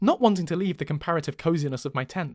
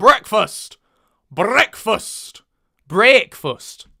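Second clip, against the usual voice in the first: breakfast said very loudly in Northern English accent; 4 semitones higher, 10 dB louder than usual. Showing how the word is said in Northern, Northern English accent. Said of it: "That's what you say in Northern".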